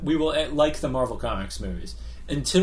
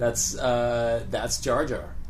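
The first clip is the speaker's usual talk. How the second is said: ordinary talk, nothing marked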